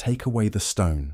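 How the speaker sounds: usual speaking voice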